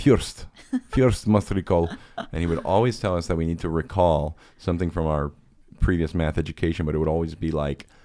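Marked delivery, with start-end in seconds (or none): 0.0-1.9 put-on Ukrainian accent, "first" said with a y-glide. Fondly recalling your math teacher's catchphrase, imitating Miron Becker's Ukrainian accent. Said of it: "He had an awesome accent".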